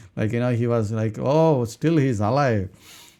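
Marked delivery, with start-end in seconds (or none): 1.1-2.6 overjoyed, rejoicing, glad exclamatory delivery. Retelling the king hearing Daniel's voice from the den: acting out a glad king. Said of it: "how glad he would be".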